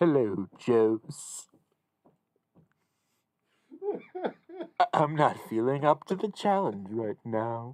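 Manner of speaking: sing-song cartoon dog voice with swooping pitch. Opening with a Droopy impression: Droopy impression. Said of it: "You gotta start with "Hello".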